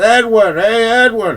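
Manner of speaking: high, loud yell at full volume. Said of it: "I just yell at the top of my lungs".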